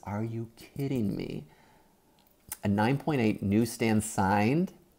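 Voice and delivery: stunned, breathless, voiceless hushed half-whisper. Reacting to a nine point eight grade, the speaker says it half-whispered. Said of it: "I have to whisper this".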